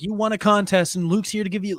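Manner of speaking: ordinary talk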